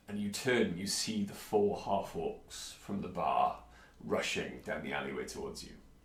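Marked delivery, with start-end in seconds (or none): none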